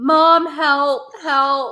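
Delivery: put-on loud, high, wailing child's scream. Retelling a sick child calling for mom: imitating a child screaming. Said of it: "Or he's screaming".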